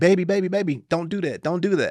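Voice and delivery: very high-pitched voice. Retelling an online video, acting out the mom as she jumps in: imitating the mom. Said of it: "So the mom jumps in and she's like".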